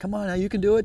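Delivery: high-pitched, encouraging, called-out yell.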